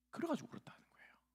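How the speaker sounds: soft, quiet, hushed whisper.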